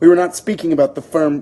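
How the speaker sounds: usual speaking voice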